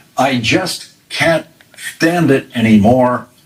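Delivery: ordinary talk, nothing marked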